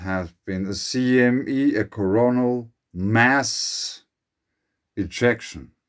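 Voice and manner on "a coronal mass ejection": mass drawn out slowly and stressed. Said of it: "I want to emphasize the second word".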